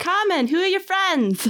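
bad Boston accent. In a role-play, a player voices the woman in front turning to ask about friends, butchered boston accent. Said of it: "I'm going to butcher a Boston accent".

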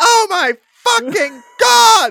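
high, loud, slow panicked screaming.

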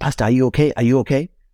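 high scream. Recalling a man at the van's wire mesh calling to the pastor, retelling someone screaming. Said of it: "and then he was screaming".

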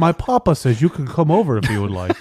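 put-on snooty, proper speech. Describing someone who called his dad Papa, the speaker imitates him: mock-snooty proper voice. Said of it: "like just like kind of snooty".

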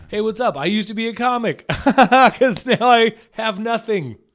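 goofy, joking put-on voice, very high and loud. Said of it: "but he said it as a joke".

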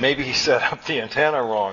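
ordinary delivery, nothing marked

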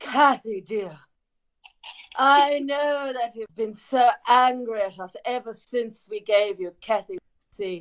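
put-on slow, slight, lightly done British accent. Performing a role that addresses kathy, speaking with a slight british accent. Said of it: "A little bit British".

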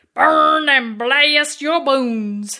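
vaguely southern put-on accent, attempted pirate voice. Asked to say the pirate-speak phrase again, it comes out in a kind of southern accent. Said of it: "That was kind of a southern".

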